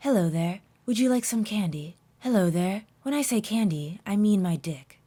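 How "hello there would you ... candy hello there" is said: put-on creepy, coaxing character voice. Acting out a game character's party line, imitating a creepy luring voice. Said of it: "He sounds like he's trying to lure you in".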